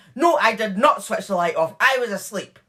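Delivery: loud, aggressive voice. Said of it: "but then aggressively she changed to".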